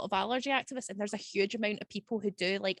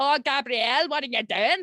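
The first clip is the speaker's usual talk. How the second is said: loud, crazy-sounding put-on Northern Irish accent; 4 semitones higher, 6 dB louder than usual. Imitating her Northern Irish pals greeting someone, Northern Irish accent impression. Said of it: "crazy Northern Irish people".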